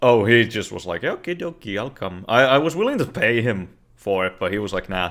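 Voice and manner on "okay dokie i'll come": put-on soft pseudo-Finnish accent. Retelling how a friend agreed to come over and fix things, pseudo Finnish accent. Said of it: "you adopted like a pseudo fucking fi- Finnish accent".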